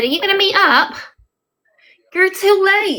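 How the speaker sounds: very high-pitched, put-on northern English accent. Retell what he said about meeting up, in a put-on northern accent. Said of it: "I put a northern accent on sometimes".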